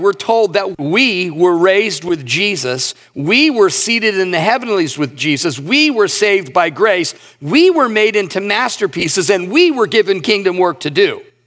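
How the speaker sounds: we stressed each time. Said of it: "I'm purposefully em-, emphasizing that word "we."".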